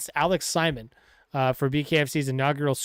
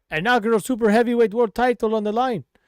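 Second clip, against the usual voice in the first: bad, loud, hammy, exaggerated Irish accent; 7 semitones higher, 5 dB louder than usual. Reporting Conor McGregor's announcement, in a terrible Conor McGregor impression. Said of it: "A terrible Irish impression".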